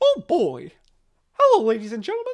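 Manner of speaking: very high, sing-song, swooping cartoon mouse voice. Speaker shows off voices they can do, Mickey Mouse impression. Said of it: "can kind of do Mickey Mouse".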